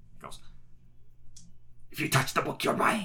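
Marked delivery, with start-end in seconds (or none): 1.9-3.1 very loud, high, menacing hiss. Narrating a voice from behind the counter that hisses at the players, hissing voice. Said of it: "you hear a voice hiss at you".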